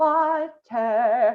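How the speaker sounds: mouth opened wide, tall open vowel. Showing learners how to say the word with the mouth opened up and down. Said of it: "Up and down".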